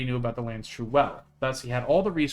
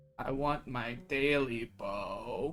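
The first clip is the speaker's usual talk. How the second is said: drawn-out, very slow, hoarse croak; 9 dB quieter than usual. Reading a creature's line aloud from a scary story: high hoarse croak. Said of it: "a high, hoarse voice croaked".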